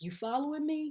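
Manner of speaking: mock teasing, eerie tone. Retelling a man getting out of his car and approaching: imitating a weird, creepy tone. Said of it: "he jokingly says in a weird, creepy way".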